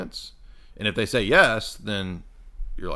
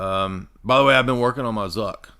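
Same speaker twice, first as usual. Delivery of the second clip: usual speaking voice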